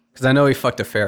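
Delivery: plain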